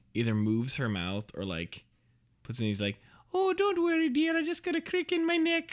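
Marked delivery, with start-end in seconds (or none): 3.3-5.7 put-on leprechaun voice. Retelling a horror movie scene, quoting the killer: imitating the Leprechaun. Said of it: "the leprechaun or whatever, like".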